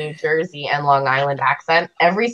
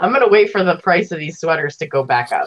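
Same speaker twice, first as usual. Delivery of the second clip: plain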